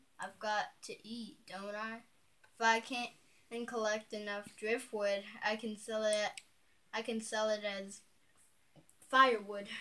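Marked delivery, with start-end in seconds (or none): none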